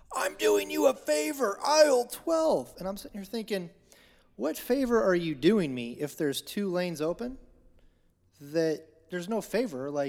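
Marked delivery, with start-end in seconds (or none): 0.1-2.7 very high, shrill, screeching shout. Speaker retelling a woman screaming at him about aisles, retelling a woman screaming. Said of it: "she starts screaming".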